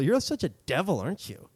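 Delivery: put-on annoyed, pissed-off tone. Retelling what he said to his girlfriend when his tone misfired: retelling sounding pissed off. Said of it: "I know I sounded really pissed".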